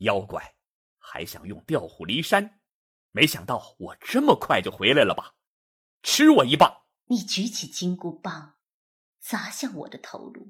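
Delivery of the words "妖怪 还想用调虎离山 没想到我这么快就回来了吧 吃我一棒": harsh, stern, much lower and louder. Narrator reads a character rebuking the narrator as a demon, harsh, stern voice. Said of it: "厉声道".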